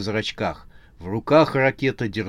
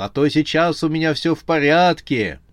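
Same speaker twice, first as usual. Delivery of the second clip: loud, high, guffawing through the words; 6 semitones higher, 5 dB louder than usual. The team captain answers a friend who says he looked gloomy, bursting out laughing. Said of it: "Ракета вдруг захохотал".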